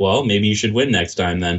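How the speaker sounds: ordinary talk, nothing marked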